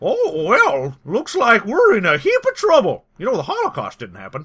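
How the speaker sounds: high, swooping animated cartoon dog voice. Asked for a little taste, the speaker does the Wowzers dog voice. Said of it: "Can you give me a little taste of that?".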